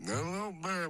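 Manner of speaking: very high, put-on Italian-American movie-style accent. Saying hi in different Italian styles, in Robert De Niro Italian. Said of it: "hi in Robert De Niro Italian".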